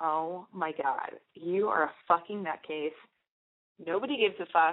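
slow, laughing through the words. Speaker retells a guy friend's reaction to what the speaker did; imitating a friend laughing while talking. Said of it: "he just started laughing and went".

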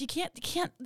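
insistent pleading pitched high. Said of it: "I'm just like".

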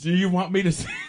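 laughing through words. Acting out a text exchange and cracking up: laughing while talking. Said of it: "Why are you laughing, girl?".

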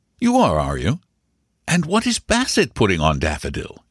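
ordinary talk

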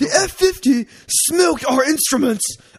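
bad fake British accent. Quoting a car article's line about the Ferrari F50, bad British accent. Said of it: "I'm going to say this in a British accent".

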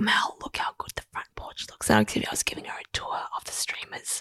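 very quiet hushed whisper, barely any voice. Retelling a porch call to a friend: imitating her own whisper. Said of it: "I was whispering".

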